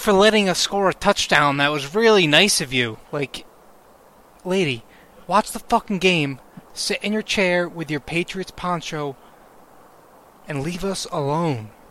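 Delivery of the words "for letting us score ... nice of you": loud, mocking, snide, sarcastic tone. Retelling what a lady said to a guy at the game, mocking sarcastic thanks. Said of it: "She's being a sarcastic asshole to the guy".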